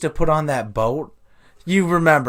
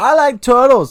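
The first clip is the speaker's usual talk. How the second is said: put-on high, loud, oddly and vaguely British kid voice; 6 semitones higher, 6 dB louder than usual. Doing an impression of the kid who said I like turtles. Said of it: "not even close. He wasn't British".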